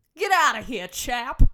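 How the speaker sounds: put-on high, very loud, booming old-timey shout. Giving an example of the phrases the speaker wants, in an old-timey voice.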